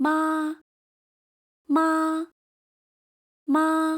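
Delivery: 妈 held high, flat and steady. Showing learners the first mandarin tone to repeat: high level first tone. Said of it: "Keep your voice level".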